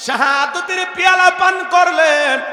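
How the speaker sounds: impassioned, high, loud preaching cry.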